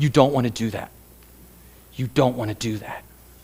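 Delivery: hushed, steady, soft murmur. Retelling how someone said it quietly in the speaker's ear: imitating someone speaking softly. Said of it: "kept saying it in my ear over and over".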